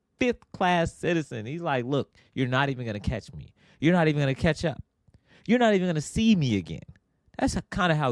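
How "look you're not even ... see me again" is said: put-on smug, cocky, boastful schoolyard kid's taunting. Retelling how a small kid in another kart taunted: imitating kid taunting. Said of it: "He treated me like a peasant".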